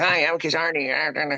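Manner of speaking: high, squeaky, slow chipmunk voice. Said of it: "I swear that I sound like Alvin and the Chipmunks".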